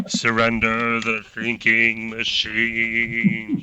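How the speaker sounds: very slow, eerie, echoing, hollow voice. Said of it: "much spookier than I'm making it sound".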